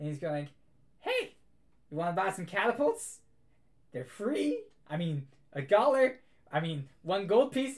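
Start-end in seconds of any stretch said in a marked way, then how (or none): 1.0-7.8 put-on raised, higher-pitched, sweet, kindly old man voice. Narrating an old man selling miniature catapults from his cart; sweet old man voice. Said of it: "this very nice old man".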